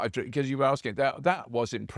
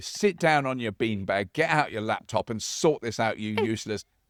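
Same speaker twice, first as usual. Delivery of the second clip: ordinary talk, nothing marked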